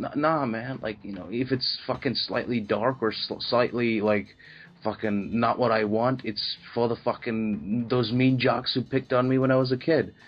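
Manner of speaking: ordinary delivery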